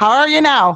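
strong Canadian accent. Showing the way a TV show does the accent: Letterkenny-style hard Canadian accent. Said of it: "They do a very hard".

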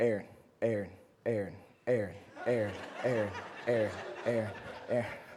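very low, flat, monotone, nagging drone. Retelling how a man kept repeating the speaker's name: imitating monotonous repetition. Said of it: "in the most monotonous, repetitive tone".

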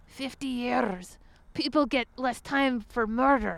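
bad, unconvincing put-on Irish accent. Retelling a phone call with an Irish guy, horrible Jimmy Quinn impersonation. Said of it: "because I do a horrible impersonation".

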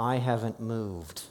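mock clenched-teeth speech. Retelling a story, the speaker voices the old husband answering his wife, retelling through clenched teeth. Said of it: "through clenched teeth just says".

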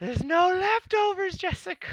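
shrill, very high, dragged-out shout. Describing a film's final chase sequence, retelling a character's yell. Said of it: "he just starts yelling".

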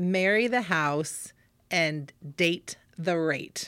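deliberately slow, slowed-down delivery. Quoting one of the agents' sayings from a meeting, said slowly. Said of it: "I'm going to have to slow it down and say it slowly".

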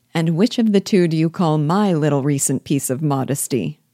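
plain

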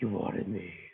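gruff put-on superhero voice. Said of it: "he's like".

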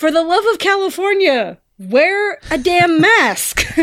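very high, shrill, loud yell. Retelling what a friend yelled out at a villain's line, retelling a friend's yell. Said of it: "my friend yells out".

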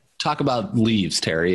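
plain

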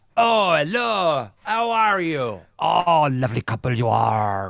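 fumbling, bumbling put-on pirate-ish voice. Proposing a restaurant disguise, a speaker plays the bumbling waiter, bumbling pirate-like waiter voice. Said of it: "Is this waiter a pirate".

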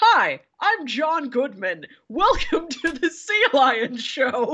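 slow, high announcer voice. Retelling the zoo's sea lion show intro: John Goodman impression. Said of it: "The intro voice is".

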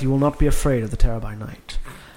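muttering quietly under breath to oneself. Speaking in character before starting up the stairs, muttering under breath. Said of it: "I mutter under my breath".

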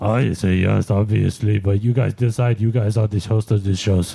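sudden put-on French accent. Speaker answering a question about voting for himself: sudden french accent. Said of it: "got like a French accent all of a sudden".

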